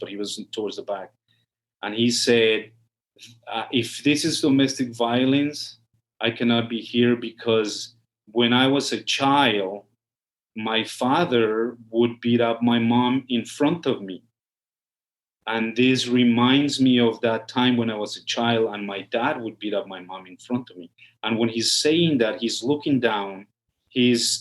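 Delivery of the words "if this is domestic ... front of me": plain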